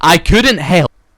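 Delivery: booming, very loud, high-pitched burst. Rehearsing a line of a reading aloud, then asking if it was loud. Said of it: "Was that too loud?".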